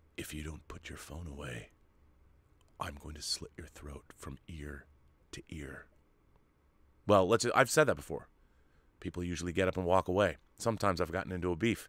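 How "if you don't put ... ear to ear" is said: very quiet, hushed, whispered put-on voice. Turning around to someone on their phone during a film: Clint Eastwood voice. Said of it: "in my Clint Eastwood voice".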